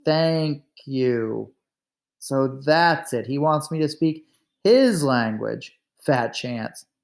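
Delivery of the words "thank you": spoken very slowly, stretched out, deliberate. Narrator reads a visitor correcting the diarist's attempt to say thanks: very slowly. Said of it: "he said very slowly".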